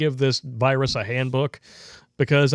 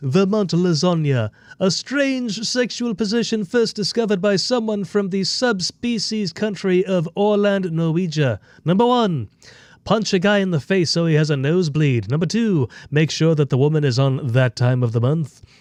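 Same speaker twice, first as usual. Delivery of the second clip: put-on cartoon baby character voice; 4 semitones higher than usual. Speaker reads an Urban Dictionary entry aloud, Stewie voice. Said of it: "I'll read it in Stewie's voice".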